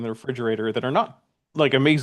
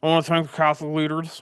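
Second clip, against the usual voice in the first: mock-drunken slurred speech; 3 semitones higher than usual. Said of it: "It sounds like he's slurring".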